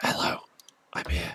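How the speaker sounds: soft, hushed whisper. Speaking as a character arriving at the library: whispering. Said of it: "I'll sort of whisper".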